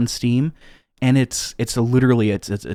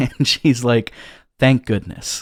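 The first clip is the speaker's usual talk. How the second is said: ordinary talk, nothing marked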